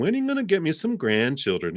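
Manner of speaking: put-on high, swooping grandmother voice with New Jersey accent.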